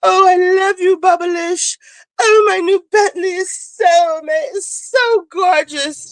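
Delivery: put-on British accent, pitched high. Imitating a reality show cast member: imitating Dorit's fake British accent. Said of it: "this fake British accent".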